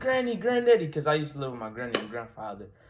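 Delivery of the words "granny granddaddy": very high, very loud crying call-out. Retelling running into the house to his grandparents with a hurt finger: retelling crying out. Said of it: "I'm crying".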